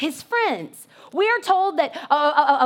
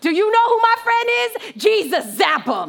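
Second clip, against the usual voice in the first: hyped, pitched-up, party-crazy boasting; 5 semitones higher, 3 dB louder than usual. Picturing yourself as a friend of God, playing a crazy turned-up friend. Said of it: "I would be the crazy person that would get, like, turn up".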